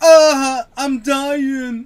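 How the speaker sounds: very loud, all-out, high-pitched scream. Imitating a game character who always screams for a medic bag: imitating Dallas screaming. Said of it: "He always screams".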